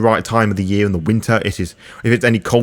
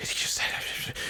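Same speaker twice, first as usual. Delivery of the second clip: tiny, hushed whisper, very quiet. Voicing guests in the room reacting in disbelief: hushed whisper. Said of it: "very hush, you know, little whispers like".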